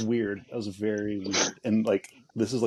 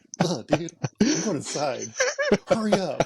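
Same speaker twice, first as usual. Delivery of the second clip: put-on yelling, higher pitch; 9 semitones higher, 4 dB louder than usual. Retelling calling a dog back at night, retelling own yell at dog. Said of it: "I'm yelling at the dog".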